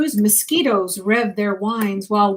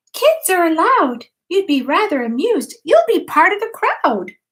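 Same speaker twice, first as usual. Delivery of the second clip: high, squeaky, clear little field mouse voice; 7 semitones higher than usual. Narrator reading a story voices a little field mouse, squeaky and clear. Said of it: "In a squeaky clear voice".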